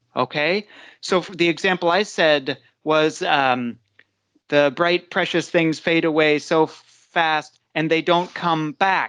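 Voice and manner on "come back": weight on "back" in "come back". Teaching word stress with an example sentence, stress on back. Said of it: "the emphasis "come back" is on is on the second word".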